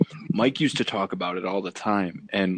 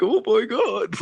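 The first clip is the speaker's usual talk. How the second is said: acted very high, cowering, terrified voice; 14 semitones higher, 4 dB louder than usual. Retelling the segment, imitating Kevin Nash cowering in fear. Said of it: "cower in the corner".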